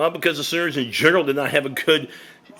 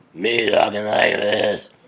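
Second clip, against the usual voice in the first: put-on slow, raspy, croaky, congested sick-sounding voice; 4 semitones lower than usual. Showing how raspy the voice sounded while sick: imitating own raspy sick voice. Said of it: "that's how I sounded".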